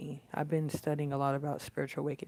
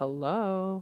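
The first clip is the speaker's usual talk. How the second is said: snide, mocking, sarcastic, raised voice; 5 semitones higher, 5 dB louder than usual. Retelling greeting a staring woman a second time with an acted-out smart-ass hello. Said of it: "like in a smart ass voice".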